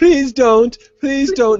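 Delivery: loud, very high pleading squeal. Retelling how the boy begs and squeals not to be hurt: imitating begging and squealing. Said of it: "he starts begging and squealing".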